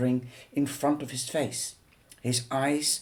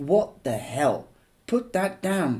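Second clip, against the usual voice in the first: fierce, overly forceful delivery; 3 dB louder than usual. As Rue picks up the camera, [name] reacts far too fiercely. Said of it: "far too fiercely".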